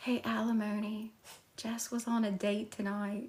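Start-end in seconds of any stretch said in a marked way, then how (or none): 1.6-3.3 secretive, hushed half-whisper, voice trailing away. Sharing news that someone was on a date tonight: half-whispering. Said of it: "Why am I whispering that".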